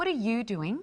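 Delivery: inquisitive, genuinely interested, curious tone. Speaker demonstrating how inflection changes a phrase's meaning: curious and interested. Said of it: "being curious and interested".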